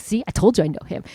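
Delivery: plain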